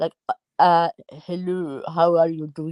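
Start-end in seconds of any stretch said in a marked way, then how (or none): 1.1-2.7 really bad put-on French accent with English twang. Imitating a French woman's English twang: bad Fawlty Towers-style French accent. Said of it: "She kind of had the French um, English twang".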